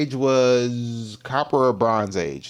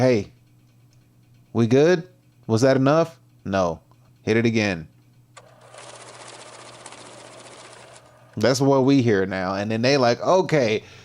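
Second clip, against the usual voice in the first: ordinary delivery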